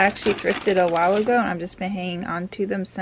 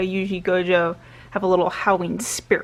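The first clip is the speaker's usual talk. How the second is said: ordinary delivery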